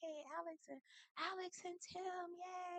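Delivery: very quiet, barely there, drawn-out little cheer. Cheering for a couple from the background: quiet low-voiced cheer. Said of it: "in the background with a low voice".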